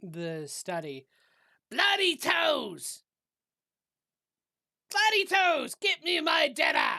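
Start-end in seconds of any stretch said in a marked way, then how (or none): 1.7-7.0 very high, shrill, very loud call from afar. A character in the study calls out to the others, calling out loudly. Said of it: "you hear calling out from the uh".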